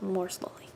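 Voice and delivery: soft whisper trailing off and fading away.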